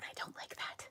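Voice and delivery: soft, unvoiced whisper.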